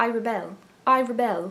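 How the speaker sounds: very slow put-on British accent. Trying out a trailer line the way it might sound: British accent. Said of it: "how do you say "I rebel" with a British accent".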